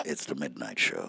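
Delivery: very low, very soft, creaky, hushed sultry murmur. Asked to do USA Credit Repair as if it were midnight, answer in a sexy midnight-show voice. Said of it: "How would you do USA Credit Repair if it was midnight?".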